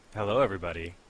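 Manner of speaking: creepy voice and tone. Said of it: "You sound like a pedophile".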